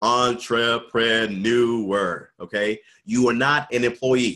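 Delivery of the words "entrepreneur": entrepreneur said slowly, deliberately, carefully spelled out. Telling listeners they are entrepreneurs, saying 'entrepreneur' slowly. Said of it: "I'm going to say it slowly".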